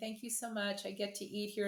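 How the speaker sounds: little, tiny, adorable voice. Retelling what a parent's child says on coming in, in a little tiny adorable voice. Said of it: "in their little tiny adorable voice".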